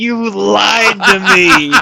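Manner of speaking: imitated shout. Retelling turning to the camera as the wall opens: imitating a shout. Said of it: "I turn to the camera and I shout".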